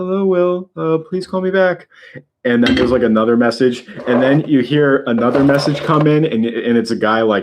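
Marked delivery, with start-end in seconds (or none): 0.0-1.9 weird, odd voice pitched very high. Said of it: "He just sounds so weird".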